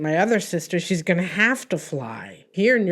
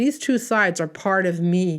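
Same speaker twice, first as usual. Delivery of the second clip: ordinary talk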